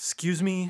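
high, irritated, put-out tone. Asking how a stranger was answered: mock annoyed tone. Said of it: "Did you do it all annoyed like".

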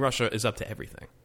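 ordinary talk, nothing marked

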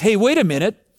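mock, almost sarcastic, half-sarcastic tone. Retelling a follower's remark about a boy with food: mock sarcastic remark. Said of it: "kind of almost sarcastically".

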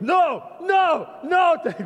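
put-on German accent, pitched very high. Retelling his teacher catching him playing rock and roll, German-accented voice. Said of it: "this German voice going".

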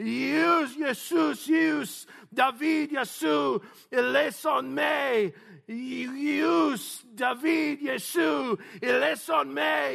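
acted pleading shout. Retelling a blind man's cry among the crowd: imitating a yell out in a crowd. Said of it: "He would yell out among the crowd".

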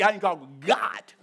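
the G in God strongly punched and stressed. Showing how we say needing to talk to god: strong stress on god. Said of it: "We put an emphasis on that G".

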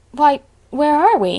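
startled, baffled outcry. Arriving on an unfamiliar lonely road, a traveller exclaims in bewilderment. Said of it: "exclaimed Diana in bewilderment".

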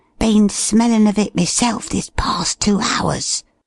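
hissing, high, sibilant whisper. Replying to the man he calls sir, who smells a rat: sibilant whisper. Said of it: "returned Dollops in a sibilant whisper".

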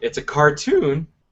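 breaking, cracking voice. Telling the other speaker about the cartoon Beware the Batman: voice cracking. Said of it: "as my voice cracks".

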